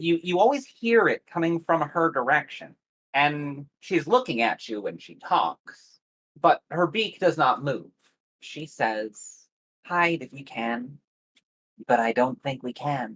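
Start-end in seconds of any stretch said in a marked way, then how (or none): 9.9-13.2 calm grandmotherly, motherly voice. Voicing a talking bird who warns the players: calm motherly voice. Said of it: "she does so in a calm, motherly voice, perhaps grandmotherly".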